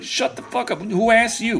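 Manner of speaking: squeaky, very high put-on Brooklyn street accent. Voicing a bear in a hunting game: voicing a bear with Brooklyn accent. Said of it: "Why you sound like you're from downtown, like, Brooklyn?".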